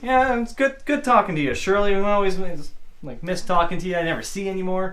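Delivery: high, cheery, chummy, happy buddy-buddy tone. Retelling how a cop greeted a woman on the ground, acting out his happy talk. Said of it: "He's all happy".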